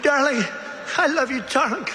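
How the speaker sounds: high-pitched screaming cry, calling out. Retelling how a mother in the crowd reacted: imitating a screaming mother. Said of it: "the mother's screaming".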